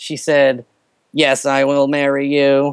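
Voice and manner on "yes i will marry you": mechanical, flat monotone robot voice. Retelling his proposal and the answer of the woman he asked, robot voice. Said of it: "she responded in a robot voice".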